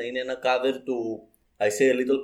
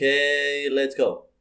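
mock-apathetic weird little voice. Imitating a TikTok sound, in a mock-apathetic weird little voice. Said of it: "μια πολύ περίεργη φωνούλα που απλά λέει με πλήρη απάθεια".

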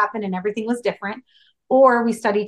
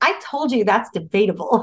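acted-out blunt, sassy, straightforward tone. Retelling a passenger's answer to a question: imitating a sassy retort. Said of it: "real straightforward, like, real s-, real sassy".

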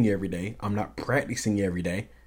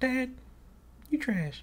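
put-on very high little-girl child's voice; 8 dB quieter than usual. Quoting his daughter's remark in her voice: imitated child's voice. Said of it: "Just like that, in her voice".

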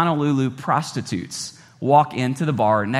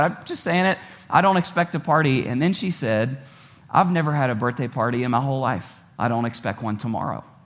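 ordinary delivery

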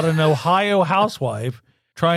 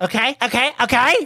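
put-on Valley Girl speech, high-pitched; 8 semitones higher than usual. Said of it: "Your crutch is a Valley Girl".

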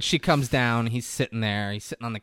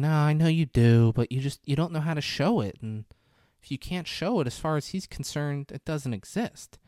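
acted uneasy, on-edge, pitched-up voice; 5 semitones higher than usual. Retelling a movie scene, the woman's answer: imitating a nervous character.

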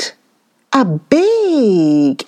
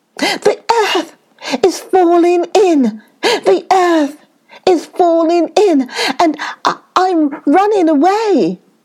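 high, gasping, frightened little rabbit voice; 8 semitones higher than usual. Narrator reads the timid little rabbit answering the second rabbit, gasping. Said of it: "there lived a very timid little rabbit who was always trembling for fear that something terrible was going to happen to him".

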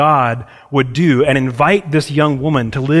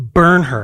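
usual speaking voice

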